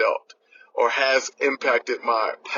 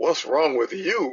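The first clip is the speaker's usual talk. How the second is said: pointed, accusing, blaming tone; 4 semitones higher than usual. Retelling how someone asked if they were okay, imitating an accusatory tone. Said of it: "spoken with an accusatory tone".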